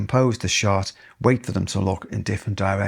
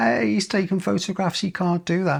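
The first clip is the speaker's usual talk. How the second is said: mock, very high, shrill, high-pitched screaming; 11 semitones higher than usual. Speaker retells an old lady behind him shouting about his photographing: retelling her shouting. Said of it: "shouting and screaming".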